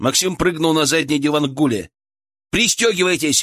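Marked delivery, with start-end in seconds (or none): 2.5-3.4 high-pitched, urgent tone. As a storm front approaches, a man in the car loudly orders the others. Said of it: "громко приказал Илья".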